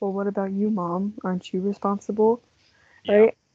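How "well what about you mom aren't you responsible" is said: hushed, soft delivery. Recapping a scene where Peter answers his mom, Peter speaking really quietly. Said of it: "really quietly goes".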